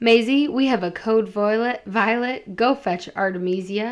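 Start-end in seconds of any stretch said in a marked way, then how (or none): none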